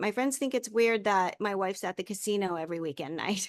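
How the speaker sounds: usual speaking voice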